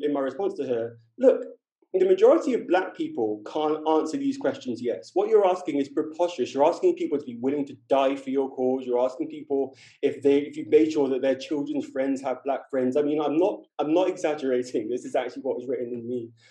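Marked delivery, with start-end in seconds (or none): none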